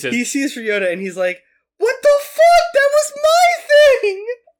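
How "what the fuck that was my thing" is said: indignant put-on clown voice, very high and very loud. Imitating the hypnotist's reaction on seeing Ryota, in a put-on clown voice. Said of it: "That's exactly the voice he has too".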